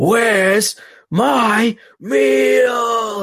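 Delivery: mock high shrieking scream, pitched way up. Retelling a movie scene where a man screams at a ghost, imitating someone screaming. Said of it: "and like screams at it".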